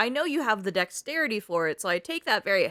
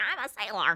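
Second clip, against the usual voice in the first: put-on grumpy, cranky cartoon duck voice. Imagining a real duck in a little hat saying: cranky duck voice. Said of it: "he's real cranky, and he's like".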